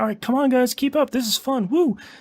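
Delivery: high, bright, quick-paced, peppy cheerful tone.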